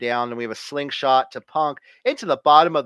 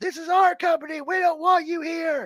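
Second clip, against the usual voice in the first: put-on wrestler-style yelling, pitched higher. Retelling a wrestling match where one wrestler yells at another: imitating Seth Rollins yelling. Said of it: "Rollins is yelling at him".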